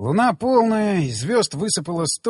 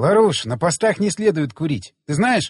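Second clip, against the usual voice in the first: ordinary delivery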